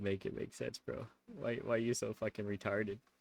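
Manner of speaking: mock pained, hurting voice. Voicing what a pained-looking dude seems to say: imitating someone in pain. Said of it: "Dude looks like he's so in pain".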